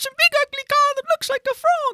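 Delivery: squeaky, very high put-on funny guy voice. Retelling a show's funny team member describing a car: Tommy impression. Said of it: "your impression of Tommy is perfect".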